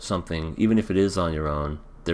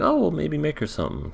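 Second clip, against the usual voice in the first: put-on voice, pitched way up. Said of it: "But then she's like".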